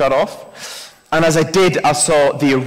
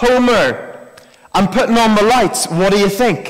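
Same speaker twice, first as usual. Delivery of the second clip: put-on raised shout, pitched up, calling over distance; 6 semitones higher than usual. Retelling a story, the neighbour next door calls over to Homer: retelling Ned Flanders shouting over. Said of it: "ned flanders next door shouts over".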